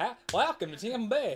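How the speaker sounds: Florida accent impression. Teasing the other speaker that everyone from Florida sounds like this, Florida accent impression. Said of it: "everyone from Florida sounds like this".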